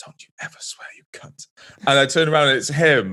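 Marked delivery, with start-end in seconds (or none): 0.0-1.5 hushed whisper right up close, in the ear. Retelling a teacher sneaking up on a dance floor: imitating Mister Allen whispering. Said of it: "someone whispering in my ear".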